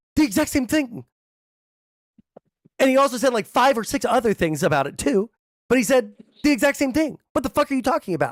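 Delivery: loud, high yelling. Arguing with another speaker over what Trump said, yelling.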